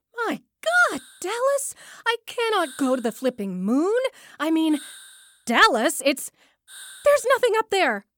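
high, frantic, full-on panicked outburst. Character stuck in a rocket with his family, pleading with Dallas, panicking. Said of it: "You're panicking".

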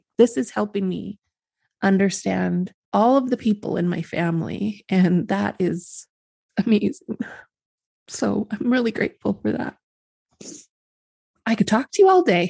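emotional, tearful, crying. Telling Aaron how grateful the speaker is, crying. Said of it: "And now I'm crying".

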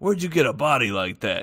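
put-on tough-guy New York Italian accent. Retelling what a customer asked a lady: imitating a tough Italian New Yorker. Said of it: "tough, like, Italian guy from New York".

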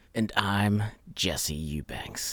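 acted tough-guy voice. A podcast host introduces himself at the start of the Enneacast, in his toughest voice. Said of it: "we're doing these voices".

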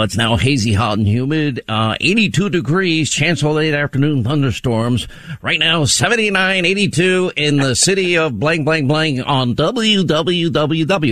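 radio station announcer reading voice. Reading a weather report as a pretend radio announcer: playing radio person. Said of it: "we all try to play radio person".

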